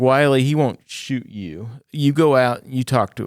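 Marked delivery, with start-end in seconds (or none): none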